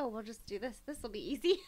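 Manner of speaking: ordinary delivery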